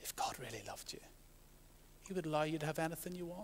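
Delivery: hushed, quick, sly, slithering serpent whisper. Retelling the Garden of Eden story to Christians, voicing the serpent, sly serpent whisper. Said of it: "slithering serpent whispers".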